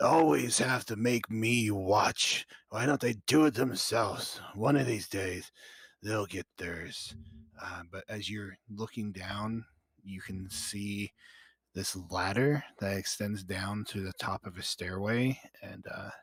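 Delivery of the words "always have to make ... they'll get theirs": very harsh, raised talking voice. Voicing someone heard talking below a trapdoor in Abyssal: harsh talking voice. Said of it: "you hear this very harsh talking".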